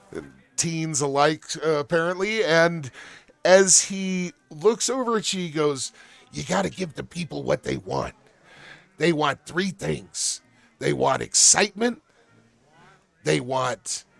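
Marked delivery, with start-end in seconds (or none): 6.4-14.1 raspy, rasping voice. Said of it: "you hear a raspy and familiar voice".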